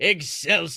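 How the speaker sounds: put-on old man voice. Showing the difference between two voices: Stan Lee voice. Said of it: "and then Stan Lee is here".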